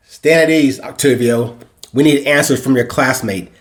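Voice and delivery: ordinary delivery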